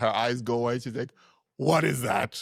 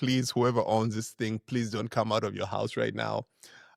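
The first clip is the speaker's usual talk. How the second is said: ordinary delivery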